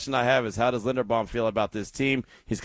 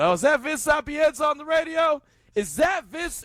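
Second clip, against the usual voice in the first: very high-pitched, rising, teasing heckling yell. Recalling messing with someone during his show, retelling own yelling. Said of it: "I start yelling".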